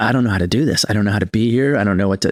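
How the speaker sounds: put-on terrified, panicky, scared voice. Retelling own thoughts on a double date: retelling being terrified. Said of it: "and I was so terrified".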